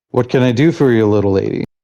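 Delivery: rough, gruff, harsh-sounding voice. Retelling what someone who walked over said, in a gruff voice. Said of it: "kind of a gruff voice just says".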